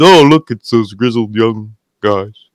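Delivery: flat, unexcited tone. Contrasting a commentator's flat call with an excited one: imitating Kevin Owens, flat and uncharismatic. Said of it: "Kevin Owens".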